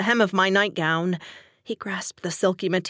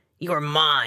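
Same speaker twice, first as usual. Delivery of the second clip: snarled, much lower pitch; 5 semitones lower than usual. A husband speaks to his wife, snarled. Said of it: "he snarled".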